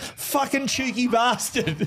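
joking, laughing taunt.

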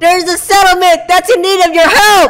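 high-pitched, loud shouting.

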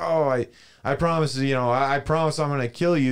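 high, flippant, careless, offhand tone.

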